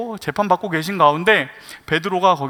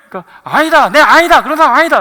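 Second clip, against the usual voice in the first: fast, put-on Korean regional satoori dialect accent; 8 semitones higher, 9 dB louder than usual. Acting out a denial in a retold exchange, in a regional dialect accent. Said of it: "갈리 사투리. 지금 사투리가 딱 그 말투가 그거네".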